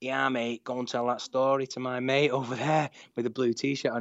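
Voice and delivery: put-on Mancunian accent. Quoting a man at the bar who overheard the speaker's pitch: proper Manc accent. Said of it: "in a proper Manc accent".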